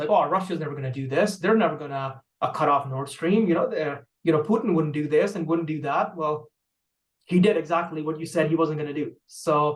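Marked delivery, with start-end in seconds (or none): none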